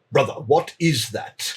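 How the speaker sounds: slow, lumbering, big war-construct creature voice. Narrating a scene, voicing a large warforged speaking to its smaller companion. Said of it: "you see as a large warforge".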